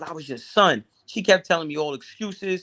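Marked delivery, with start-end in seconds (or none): none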